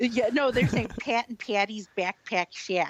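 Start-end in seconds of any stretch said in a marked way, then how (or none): 1.0-2.9 put-on Midwestern accent, hard a in Pat and backpack. Speaker quotes an old SNL skit mocking the Midwest; Midwest hard-A accent. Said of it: "that hard A".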